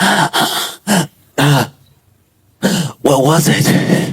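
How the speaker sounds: very drawn-out, breathless words with slow winded panting. Retelling what he finally said while doubled over, imitating being winded. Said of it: "he's winded too".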